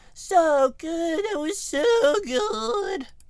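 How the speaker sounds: put-on squeaky, very high, loud child voice. Explaining a japanese word, the speaker imitates a child saying it: weird child voice. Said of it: "That's my weird child voice".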